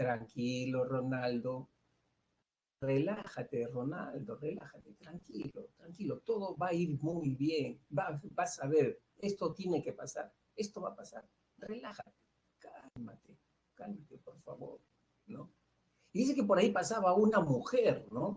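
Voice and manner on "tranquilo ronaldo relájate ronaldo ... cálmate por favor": very soft, quiet murmur, quieter. Retelling how a father soothed his crying baby: imitating a very soft murmur. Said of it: "murmuraba bien bajito".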